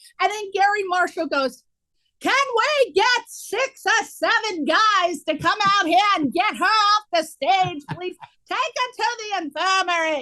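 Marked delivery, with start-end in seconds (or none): 2.2-10.2 put-on New York accent. Retell how help was called to get you off the stage, in Garry Marshall's New York accent. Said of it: "with his New York accent".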